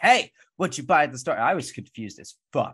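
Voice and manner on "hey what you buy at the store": fast, rattled-off, high-pitched shout. Retelling a scene where a woman yells at another leaving a grocery store, retelling a woman's yell. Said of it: "this woman is just like yelling at her".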